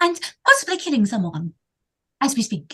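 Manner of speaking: put-on English accent done for show. Calmly repeating in character that something is undead: Mary Poppins accent. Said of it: "she sounds like Mary Poppins".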